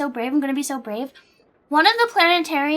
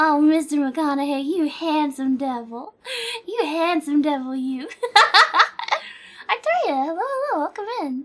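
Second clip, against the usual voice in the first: put-on little-old-lady way of talking. Complimenting a man the way a grandma would, in an old grandma voice. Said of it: "How do you sound like a grandma".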